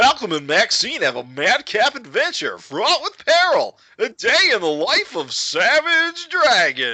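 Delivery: very high, swooping sitcom-style voice. Asked by another speaker for a sitcom voice, reading a comic's blurb in sitcom voice. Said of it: "can I hear your like sitcom voice".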